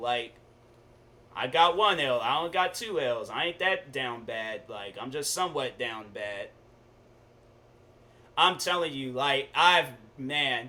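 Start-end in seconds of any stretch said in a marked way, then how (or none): none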